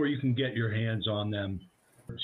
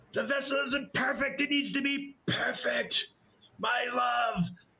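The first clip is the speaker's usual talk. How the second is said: piercing, very high, loud screaming; 14 semitones higher than usual. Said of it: "she's screaming very loudly".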